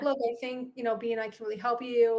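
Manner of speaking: ordinary talk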